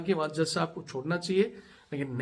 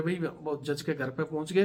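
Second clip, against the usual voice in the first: ordinary delivery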